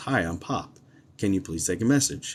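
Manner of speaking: usual speaking voice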